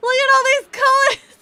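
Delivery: mock very high-pitched, very loud, thrilled excited shriek. Retelling finding excess scooters, reenacting excited screaming at him. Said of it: "I'm just screaming at him".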